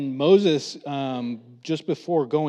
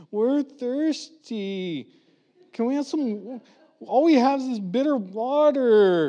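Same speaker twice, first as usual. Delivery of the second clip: put-on high, whiny kid voice, water drawn out; 9 semitones higher than usual. Retelling a story, the speaker acts out a group complaining: mock whining like kids. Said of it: "Do I sound like my kids?".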